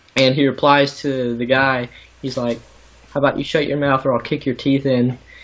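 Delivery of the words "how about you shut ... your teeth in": unraised, calm, level, matter-of-fact menacing tone. Quoting a bar scene reply to a guy: imitating Ryan Gosling's calm threat. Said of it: "the way he said it and looked at him was just so calm".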